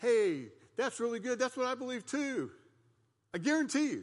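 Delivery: high, loud, gushing voice.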